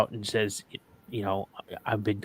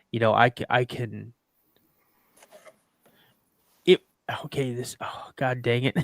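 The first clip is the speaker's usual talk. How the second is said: emotional, choked voice. Telling the others how rough a death was for him, choked up. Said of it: "I'm getting choked up as it is".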